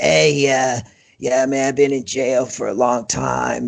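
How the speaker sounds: put-on rough older voice, unhurried, slow drawl. Retelling what an older inmate said between the cell bars: rough voice imitating Steve. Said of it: "he's got this really rough".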